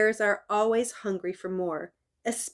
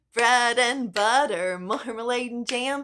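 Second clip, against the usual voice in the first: ordinary talk, nothing marked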